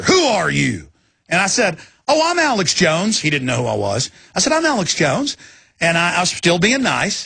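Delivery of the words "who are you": commanding, barking drill sergeant voice. Retelling what a man asked the speaker, like a drill instructor. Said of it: "Like a drill instructor".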